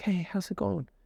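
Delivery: speaking very softly and gently, light voice. Showing how talking very softly sounds in a greeting: very soft voice. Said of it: "if we talk very softly".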